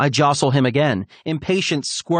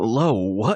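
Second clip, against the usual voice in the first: sleep-rough, low, raspy just-woken voice; 4 semitones lower than usual. Narrator voices a man pushing himself up to sit in bed, raspy, sleep-rough voice. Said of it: "in a raspy, sleep-rough voice".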